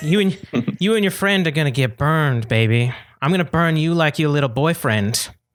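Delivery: put-on Southern accent, hushed, whispered, threatening. Playing a character who pushes Morgan down and whispers in her ear, southern accent. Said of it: "How do I do a southern accent again?".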